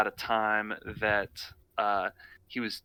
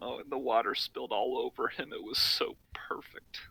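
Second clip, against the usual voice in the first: soft, teary, choked-up voice; 2 semitones higher, 5 dB quieter than usual. A character tears up as he speaks about a past moment; tearing up. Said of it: "Oscar tears up as he says".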